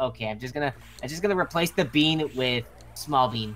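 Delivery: ordinary talk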